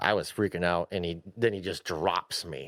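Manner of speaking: ordinary talk, nothing marked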